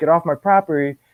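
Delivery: ordinary delivery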